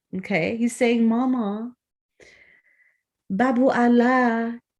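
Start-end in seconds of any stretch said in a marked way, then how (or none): 1.0-4.5 small put-on little child voice. Mother retells her son speaking in Assyrian; little child's voice. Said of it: "in this little voice".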